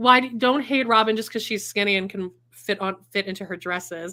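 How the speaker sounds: usual speaking voice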